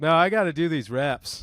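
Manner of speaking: ordinary delivery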